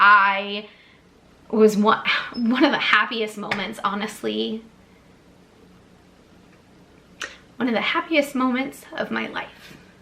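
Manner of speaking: emotional, choked-up voice welling with emotion. Speaker recalling a weekend with new friends: emotional. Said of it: "I'm sorry to get emotional".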